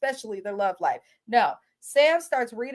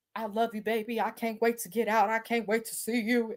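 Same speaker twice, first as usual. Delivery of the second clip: mock man crying, reading cadence, quieter; 4 dB quieter than usual. Retelling a man reading a letter aloud: imitating Sam crying. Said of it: "But he is crying".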